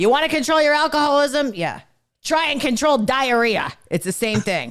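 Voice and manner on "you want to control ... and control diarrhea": rough, hard-edged raspy voice, pitched up. Retelling a father's analogy about alcoholism: imitating dad's raspy hard voice. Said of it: "in his raspy ass hard voice".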